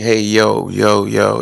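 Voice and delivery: put-on very slow, drawn-out Philadelphia accent. Telling someone how your old boss from Philly sounded, imitating a boss from Philly. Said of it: "she sounded like".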